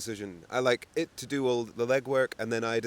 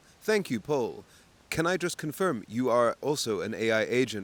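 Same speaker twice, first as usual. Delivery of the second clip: put-on robotic computer voice. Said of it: "it's like very computer speak".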